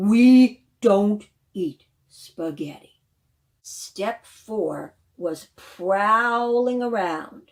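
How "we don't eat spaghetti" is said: very loud, booming lion growl, drawn-out "we". Reading a story where the Lion answers the narrator's question, growling lion voice. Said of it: "The Lion growled".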